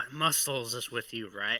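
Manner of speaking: soft whispered voice throughout. Speaking in character to another character, whispering in character. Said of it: "I kinda whisper".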